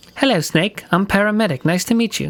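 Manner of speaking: put-on girl's voice. Voicing a crew member introducing herself to Snake, in a Paramedic voice. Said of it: "I gotta do this girl's voice too?".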